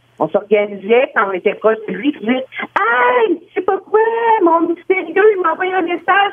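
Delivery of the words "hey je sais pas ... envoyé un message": high, loud, showy announcing voice. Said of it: "on le disait à haute voix".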